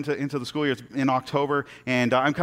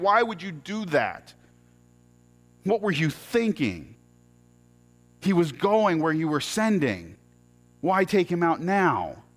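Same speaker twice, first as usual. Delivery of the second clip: put-on mad, accusing voice, swooping pitch; 3 semitones higher than usual. A student recalls yelling at God at night, retelling yelling at God. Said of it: "I'm yelling at God in the middle of the night".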